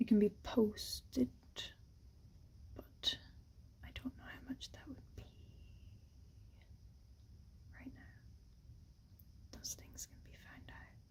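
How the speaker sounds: hushed voice. Explaining how to get a framed piece posted abroad, whispering. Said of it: "Why am I whispering?".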